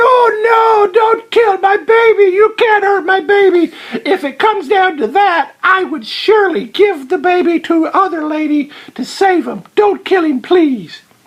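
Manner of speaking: mock crying, high and tearful begging, drawn-out oh. Retelling a story, the speaker voices the second lady: imitating tearful pleading. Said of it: "started like crying and going".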